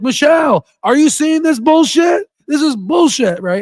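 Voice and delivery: acted-out yelling outburst, very high-pitched and shrill. Retelling yelling at an iPad screen while calling to someone, retelling a yell. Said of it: "I was just yelling at the".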